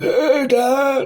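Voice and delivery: put-on very high child voice with a heavy smoker's sound. Imitating how the kid in the film sounds: imitating a heavy smoker's voice. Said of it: "sounds like he smokes forty Bensons a day".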